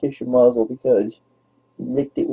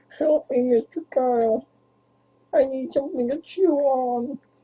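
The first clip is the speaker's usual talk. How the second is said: very high cartoon frog puppet voice; 13 semitones higher, 4 dB quieter than usual. Offering listeners a voice that everybody likes, then doing the Kermit the Frog voice. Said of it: "Would you like the Kermit the Frog voice?".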